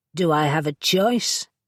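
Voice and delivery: rough, grudging, gruff voice. Reading a story, a helper asked to assist a borrower: gruff voice. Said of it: "in a gruff voice".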